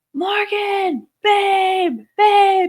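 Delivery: mock very high shriek, drawn-out babe. Retelling holding the baby and calling for her boyfriend: retelling her own screaming. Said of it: "and I'm screaming".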